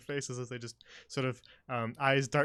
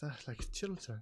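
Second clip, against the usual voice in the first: very quiet whispered mutter under the breath; 9 dB quieter than usual. Voicing a character sitting back down: under her breath. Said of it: "just sort of under breath".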